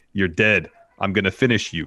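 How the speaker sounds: plain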